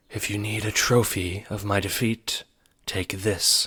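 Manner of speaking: silky, smooth voice with knife-edged cruelty. A queen who has descended her throne addresses the players, smooth, cruel voice. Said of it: "she says in her smooth, cruel voice like the edge of a knife".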